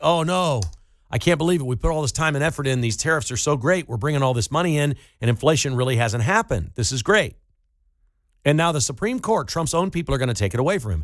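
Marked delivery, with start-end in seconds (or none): none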